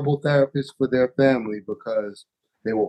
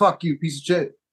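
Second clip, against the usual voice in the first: put-on angry, furious outburst; 4 semitones higher than usual. Acting out a client who storms out: imitating an angry client. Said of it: "storm out".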